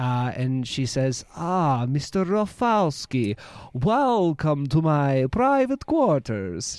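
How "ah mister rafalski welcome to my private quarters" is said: slow, drawn-out vampire voice. Voicing her as she welcomes a visitor into her private quarters, Dracula voice. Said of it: "She has a Dracula voice too".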